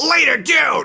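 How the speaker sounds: brief, sweet, high-pitched. Signing off the episode imitating Eddie Sparks. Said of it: "I think that's how he would say that".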